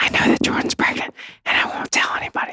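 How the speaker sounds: breathy, hushed, secretive whisper. Retelling what a man said to them unprompted: imitating someone whispering. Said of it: "dude, why are you whispering?".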